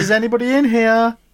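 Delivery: calling voice, pitched very high. Describing a cleaner knocking on the toilet door, imitating the cleaner. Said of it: "I wasn't trying to do an accent".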